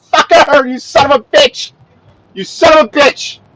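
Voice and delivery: shouting in anger. Driver cursing at another driver stuck in traffic, angry yelling. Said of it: "Sorry for yelling".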